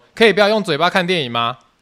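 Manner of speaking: mock fed-up, loud, high, impatient yell. Retelling yelling at people talking during a movie: retelling an impatient shout. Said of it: "就是这么大声，就是这么的不耐".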